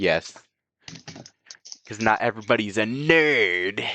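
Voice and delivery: really aggressive, "nerd" drawn out. Answering a question about spoilers, in an aggressive voice. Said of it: "that was a really aggressive voice".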